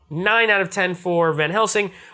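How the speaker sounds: ordinary talk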